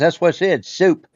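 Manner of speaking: put-on far-north American accent. Retelling a man from way up north talking to the speaker, imitating a northern US accent. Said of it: "he's from somewhere up north, way up north".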